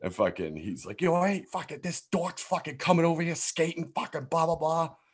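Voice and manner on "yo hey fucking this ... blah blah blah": put-on heavy New Jersey accent, very high-pitched. Retelling what a guy said about him skating, thick jersey accent. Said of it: "he has this thick-ass Jersey accent".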